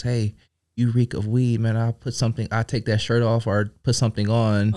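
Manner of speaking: mock whispering. Retelling a rescue worker's warning at the ambulance: imitating someone whispering. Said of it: "he whispers in my ear".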